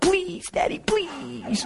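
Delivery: put-on very high, soft, sweet child's pleading voice. A father retells his five-year-old begging him, imitating a child pleading sweetly. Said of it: "5-year-old melt in your heart".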